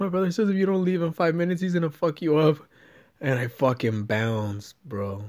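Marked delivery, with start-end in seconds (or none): 0.0-2.6 mock weepy, tearful crying voice. Retelling what she said when she came back: imitating someone crying. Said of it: "she comes back and she's crying".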